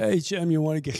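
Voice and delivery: put-on cartoonish hunter voice. Retelling a friend's invitation to get coffee: Elmer Fudd voice. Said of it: "talks like Elmer Fudd".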